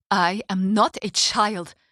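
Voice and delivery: hissing through clenched teeth. Narrator reading a character's reply to someone demanding her bags, hissed through gritted teeth. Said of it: "she hissed through gritted teeth".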